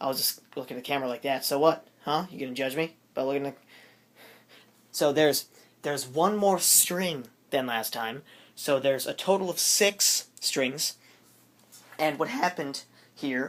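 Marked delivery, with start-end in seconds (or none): 12.0-13.5 voice cracking and breaking mid-phrase. Speaker talking to the camera about the strings, voice cracking. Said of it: "voice cracked, you hear that?".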